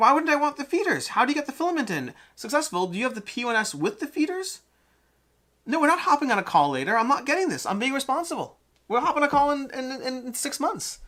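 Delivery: high, squeaky, annoyed protesting voice. Annoyed by a printer conversation, the speaker gets squeaky. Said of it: "I'm getting squeaky".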